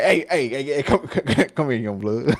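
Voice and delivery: voice calling out. Describing a coach as the uncle on the sideline, imitating a sideline uncle. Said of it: "he the uncle on the sideline, not even coaching. Like, trying to be like".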